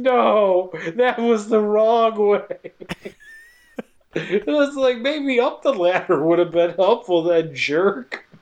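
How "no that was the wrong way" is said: imitated scream stretched out into a mild cry. Recapping a scene with an alien heading at him: imitating the lady's scream. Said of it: "the lady screams".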